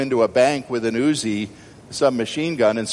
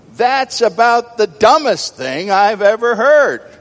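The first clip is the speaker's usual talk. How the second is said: put-on very high, raised, half-cross fatherly voice; 10 semitones higher, 7 dB louder than usual. Acting out a show's father answering his son's lame remark, imitating semi-angry Bill Cosby. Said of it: "in a semi-angry tone".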